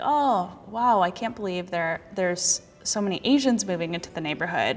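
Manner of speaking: ordinary talk, nothing marked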